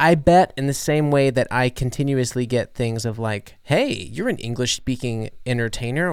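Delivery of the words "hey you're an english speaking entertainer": usual speaking voice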